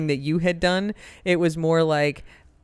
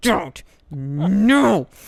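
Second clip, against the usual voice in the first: acted stern, angry, swooping scolding, drawn-out "no". Retelling stopping them while trying not to scream: mock real angry voice. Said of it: "she's using the real angry voice".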